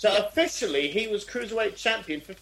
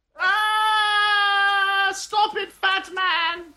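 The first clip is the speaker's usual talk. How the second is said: very high, drawn-out wail; 11 semitones higher, 5 dB louder than usual. Acting out the other wrestler in a match: imitating someone wailing. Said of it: "the other guy just sort of wailing?".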